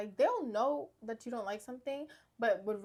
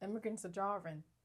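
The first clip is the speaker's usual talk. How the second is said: put-on British accent, quieter; 2 semitones lower, 6 dB quieter than usual. Quoting a line from a video: imitating a British accent. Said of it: "It's British".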